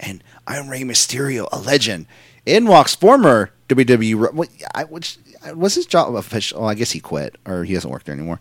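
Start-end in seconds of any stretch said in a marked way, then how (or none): 0.0-2.1 put-on raspy whisper, quieter. Describing a wrestler's way of talking: imitating Rey Mysterio's raspy whisper. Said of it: "the raspy whisper".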